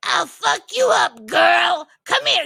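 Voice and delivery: loud, high, fired-up, aggressive, threatening tone. Speaker acts out Marianne when someone messes with her man: imitating her aggressive threat. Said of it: "she gets all like, rah".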